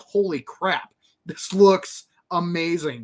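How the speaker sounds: ordinary talk, nothing marked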